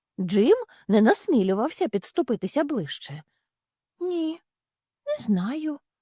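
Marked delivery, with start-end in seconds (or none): 4.0-5.8 soft-spoken, gentle, kindly voice, slightly high. Narrator reads the newcomer's answer to the big cat, gently. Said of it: "відповів він лагідно".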